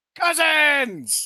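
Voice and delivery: shrill, very high, very loud shriek at full blast. Playing a character as others reappear and hug: screaming. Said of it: "I scream".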